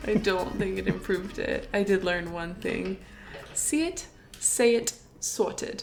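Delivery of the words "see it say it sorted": really bad, clumsy fake British accent. Podcast host back from Europe, saying a phrase he learned in a really bad British accent. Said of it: "me doing a really bad British accent".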